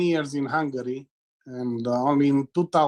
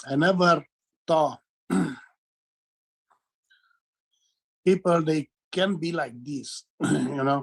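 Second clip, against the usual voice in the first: crying while talking; 3 semitones higher than usual. Speaking to someone right after saying so: crying while talking. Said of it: "I'm crying".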